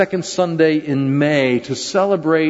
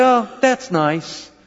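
patronizing, high, condescending tone; 6 semitones higher than usual. Retelling how people replied to a stay-at-home mom: imitating a condescending tone. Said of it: "they'd get sort of a condescending tone".

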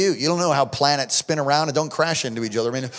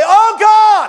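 very high, very loud outcry; 11 dB louder than usual. Retelling praying over a dying son in a full room: retelling a raised-voice cry. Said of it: "lifted my voice and say".

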